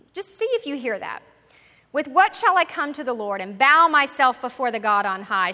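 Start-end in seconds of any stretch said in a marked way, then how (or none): 1.9-5.5 very loud with a touch of arrogance. Reading a passage aloud as instructed: slightly arrogant. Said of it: "Read this with perhaps just a little bit of arrogance sounding in it".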